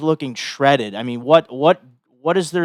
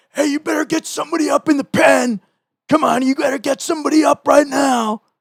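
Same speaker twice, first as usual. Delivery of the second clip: play-acted, very high, yelling heckler's shout; 12 semitones higher, 3 dB louder than usual. Retelling a fan near the bullpen at a baseball game: imitating a fan yelling. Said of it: "there's a guy yelling".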